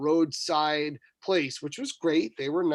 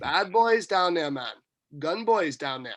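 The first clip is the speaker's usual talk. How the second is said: ordinary talk, nothing marked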